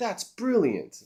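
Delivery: play-acted, very high, fawning, gushing praise. Imitating an AI that praises every idea: imitating gushing AI flattery. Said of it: "it kisses my ass a little too much".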